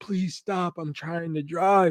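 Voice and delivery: weepy, tearful voice, crying through tears. Speaker imagines the addressee driving a dinner guest home, imitating Jamie crying. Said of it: "crying at the fucking wheel".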